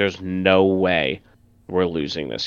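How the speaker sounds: ordinary talk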